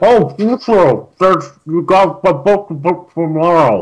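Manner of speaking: talking with mouth full. Eating pecan bread, Kagrath talks to Flahan and Grash, talking with mouth full. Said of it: "she's talking with her mouth full".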